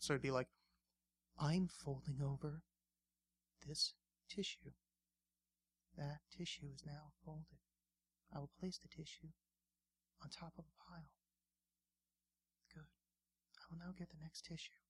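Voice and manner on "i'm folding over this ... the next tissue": hushed, soft-spoken ASMR narration. Explaining asmr videos, the speaker imitates one: soft asmr voice. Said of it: "really soft voice women doing kind of banal tasks".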